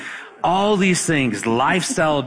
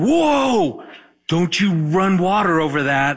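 high, loud yell. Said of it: "she yells out".

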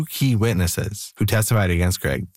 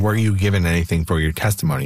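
plain

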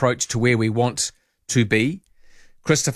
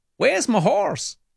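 put-on American accent, higher; 10 semitones higher than usual. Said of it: "I had to talk like an American".

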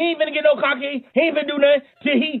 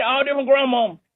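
usual speaking voice

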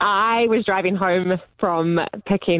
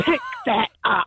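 stern, grumpy scolding woman's voice, pitched up, slow; 5 semitones higher than usual. Retelling scolding someone while shaking a finger at her, in a put-on grumpiest mum voice. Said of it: "in like my grumpiest mum voice".

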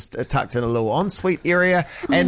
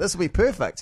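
normal talking voice

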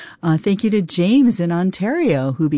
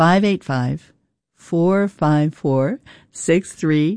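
slightly slower, slowed-down delivery. Repeating the phone number for listeners who want to become supporters, a little slower. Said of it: "I'll say it a little slower".

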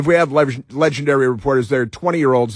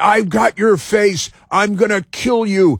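screaming voice, pitched higher; 8 semitones higher than usual. Retelling a man screaming at an ice agent: imitating someone screaming threats. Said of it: "this guy screaming at an ice agent".

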